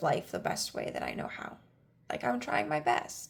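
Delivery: soft, choked-up voice, breaking. Speaking personally to a listener, a little choked up. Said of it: "I'm getting a little choked up".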